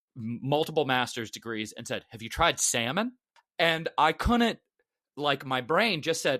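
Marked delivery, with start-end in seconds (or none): 2.1-3.1 put-on deadpan, straight-faced tone. Retelling what a man at brunch asked: imitating a straight-faced question.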